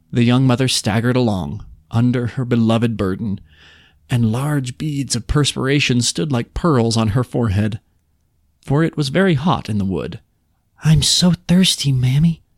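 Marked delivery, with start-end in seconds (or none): 10.9-12.4 small, whining, complaining whisper, much higher pitch. Narrator voicing a child carried by its mother, small complaining whisper. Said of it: "whispered the little complaining voice".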